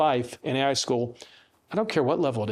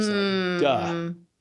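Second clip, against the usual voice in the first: plain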